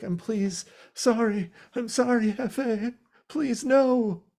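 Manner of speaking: play-acted very high, slow, tearful, pleading whimpering. Retelling a scene where a man begs not to enter a trunk: imitating pleading, whimpering and crying. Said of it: "pleading and, like, whimpering and crying".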